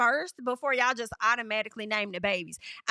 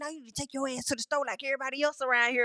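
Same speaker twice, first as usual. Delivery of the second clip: put-on whisper; 2 semitones higher than usual. Retelling what Ace said to Olandria about the bonnet: imitating Ace whispering. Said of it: "he was whispering".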